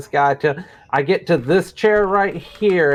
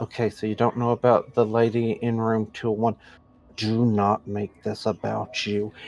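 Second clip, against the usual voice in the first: cautious, guarded, careful hushed half-whisper; 6 semitones lower, 6 dB quieter than usual. Playing a character leaning in to the mob boss: half-whispering carefully in character. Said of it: "whisper to the mob boss very carefully".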